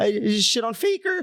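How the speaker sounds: put-on very high, nasally seventeen-year-old voice. Retelling beating Faker at seventeen, nasally high-pitched teen voice. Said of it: "my nasally seventeen year old voice and like very like high pitched".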